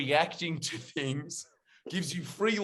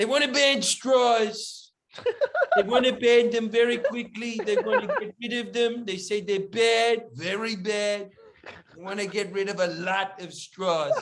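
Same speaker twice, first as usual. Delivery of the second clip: loud, pitched-up, emphatic, each phrase hammered; 6 semitones higher, 5 dB louder than usual. Describing how others imitated the way he talked, doing a Trump impression. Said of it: "an inflection in Trump's voice".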